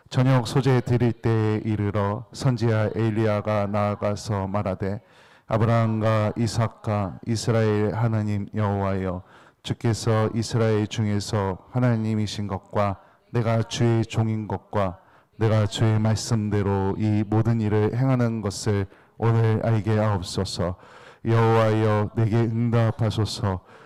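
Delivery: slow, even reading in unison, one steady tone.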